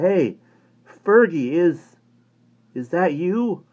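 faltering call, very high, slow and drawn out. Narrator reads Johnny calling toward a shape in the bushes: faltering voice. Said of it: "called in a faltering voice".

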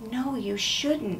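hushed, high half-whisper under the breath. Reading a story, one character answers a question the major asks: half-whispered. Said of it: "Jack whispered".

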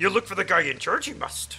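put-on wise old alien character voice. Sharing the joke in your head about finding the guy in charge, in a Yoda voice. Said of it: "Proper Yoda".

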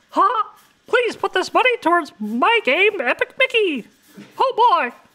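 squeaky voice, high and bouncy. Reading a viewer's donation message aloud on stream, in a Mickey Mouse voice. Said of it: "please read in Mickey Mouse noise voice".

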